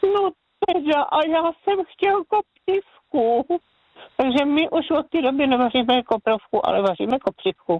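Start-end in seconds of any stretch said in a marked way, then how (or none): 0.0-3.6 put-on high, slow, frightened and dismayed little child voice. A grandmother retelling her grandson's words, imitating a frightened child. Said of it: "vyděšeně podíval".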